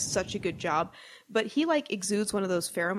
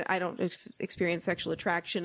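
usual speaking voice

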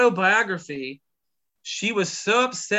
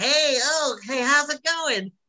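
high, nasal, cartoonish voice; 8 semitones higher than usual. Imitating Nicolas Cage's voice in a movie: crazy nasal Nicolas Cage voice. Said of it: "he kinda talks up here".

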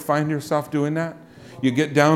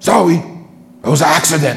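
bold, very deep put-on voice, loud and slow; 7 dB louder than usual. Speaker retells the granddaughter apologizing after a spill, imitating a real deep voice. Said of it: "she has a real deep voice".

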